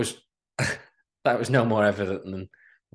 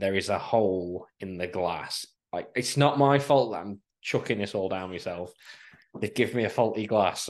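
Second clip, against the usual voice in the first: ordinary delivery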